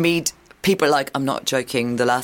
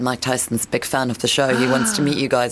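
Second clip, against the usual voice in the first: ordinary talk, nothing marked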